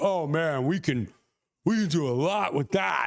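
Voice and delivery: put-on slow, drawn-out young-person way of talking. Retelling what the younger crew said after filming, imitating people under thirty. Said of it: "anyone under thirty in my head, they talk like this".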